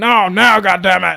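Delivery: mock-angry father voice. Retelling a family story, acting out a dad ordering his teenage son: imitating an angry dad. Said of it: "And he's like".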